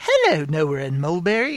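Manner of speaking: sing-song put-on British woman's accent. Retelling a fake voicemail sent as a British woman: imitating a fake British accent. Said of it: "she sent a fake voicemail in as a British woman".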